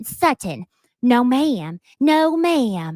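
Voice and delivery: very slow voice, each word drawn out. Retelling a reality show moment, imitating Jennifer's impression of Sutton. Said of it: "doing Sutton".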